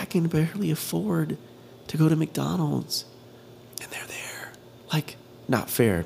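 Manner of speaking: slow, drawn-out, soft whispered grumbling. Speaker talking to listeners, whispering. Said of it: "Not really sure why I'm whispering today either".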